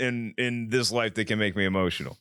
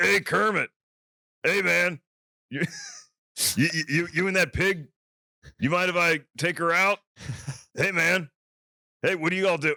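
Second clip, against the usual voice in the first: pitched-up voice of a forty-year roadie; 6 semitones higher than usual. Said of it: "sounds like a guy who's been like a roadie for the Allman Brothers for like forty".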